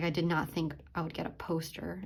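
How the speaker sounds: plain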